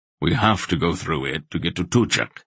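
plain

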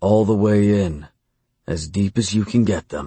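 ordinary delivery

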